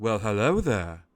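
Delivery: character voice of a talking sword. Voicing a legendary sword that speaks into a player's mind: voice of a sentient sword. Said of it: "you hear the words".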